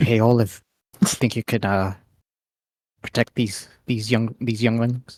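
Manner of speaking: hushed whisper. Asking olive to protect the kids, in a whisper. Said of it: "in a whisper".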